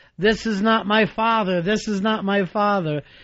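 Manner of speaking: ordinary talk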